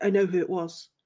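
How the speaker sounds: flat, expressionless. He replies to the others, deadpan. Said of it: "deadpan to the auras".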